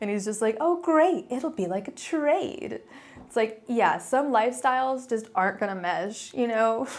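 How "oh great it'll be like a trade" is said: high, slow, sing-song, swooping, relentlessly cheerful brightness. Retelling a cartoon scene: imitating Johnny Osmond, annoyingly positive. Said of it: "so annoyingly positive".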